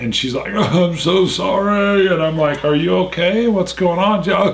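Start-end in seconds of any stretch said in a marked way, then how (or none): 0.5-2.1 mock tearful blubbering, slow, barely getting words out. Retelling a woman's phone call to the speaker, imitating someone blubbering. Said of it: "her nose is running and she can barely talk".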